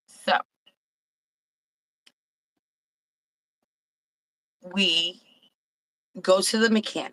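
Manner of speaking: very slow, drawn-out, slow-motion narration. Telling a story to the group, a few shots in, speaking very slowly. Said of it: "You slowed it way down".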